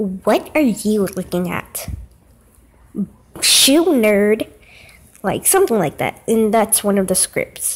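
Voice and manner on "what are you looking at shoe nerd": snotty, sassy, bratty, taunting voice. Showing the voice wanted for the character Emily: Emily's sassy bratty voice. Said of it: "you have to have this voice".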